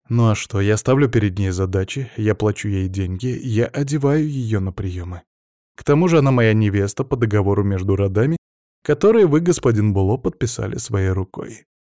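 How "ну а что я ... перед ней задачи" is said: plain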